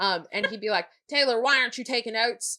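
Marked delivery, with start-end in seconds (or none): 1.1-2.6 put-on heavy, strong Southern accent. Retelling a teacher questioning a student in class, heavy southern accent. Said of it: "He had a really s- heavy Southern accent too".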